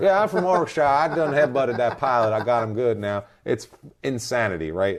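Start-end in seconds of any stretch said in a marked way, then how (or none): 0.2-3.0 put-on Texas accent, higher pitch. Mocking the man from Texas claiming to be English: imitating Kevin's Texas accent. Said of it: "He talks like Matthew McConaughey".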